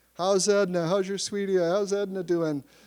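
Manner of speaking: high, ringing, loud heckling yell. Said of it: "people are yelling".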